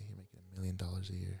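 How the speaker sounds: hushed whisper. Speaker laying out a plan meant to stay secret, whispering. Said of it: "Why are you whispering".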